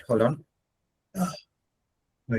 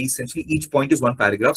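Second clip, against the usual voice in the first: ordinary talk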